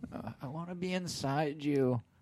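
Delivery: very slow, drawn-out delivery with voice lifted. Retelling a favorite movie line: imitating Joaquin Phoenix's character. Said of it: "he just goes".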